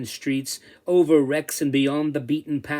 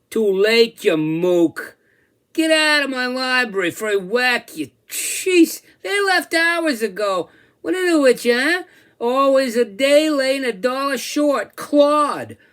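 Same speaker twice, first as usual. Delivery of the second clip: very high, loud, swooping New Jersey lilt; 10 semitones higher, 5 dB louder than usual. Reading a story aloud, the beast speaks: New Jersey accent. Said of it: "it clearly said in a Jersey lilt".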